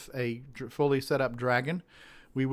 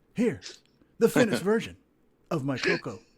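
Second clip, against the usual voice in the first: deep dramatic reading voice; 5 semitones higher than usual. Giving a dramatic reading of a short forum post: deep dramatic voice. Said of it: "We can do a deep dramatic voice".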